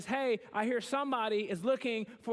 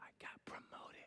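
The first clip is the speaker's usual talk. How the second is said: very quiet, hushed, breathy, secretive whisper. Retelling a friend's phone call announcing a promotion: imitating a whisper. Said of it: "called me and whispered to me".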